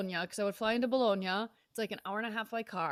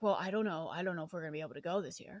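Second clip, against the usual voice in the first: low, doubtful, pessimistic voice; 4 semitones lower, 4 dB quieter than usual. Retelling how their uncle answered about the trip: imitating Uncle Lou, pessimistic. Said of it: "being the pessimistic Italian".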